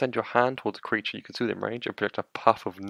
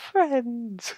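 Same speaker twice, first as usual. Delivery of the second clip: very high, comedic character voice; 14 semitones higher, 4 dB louder than usual. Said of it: "say it in the J voice from the Inbetweeners".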